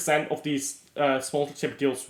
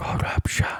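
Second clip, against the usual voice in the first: whispered right into the mic, ASMR-style. Giving the audience the ASMR treatment, a word whispered into the mic. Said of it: "I'll whisper it into your ears".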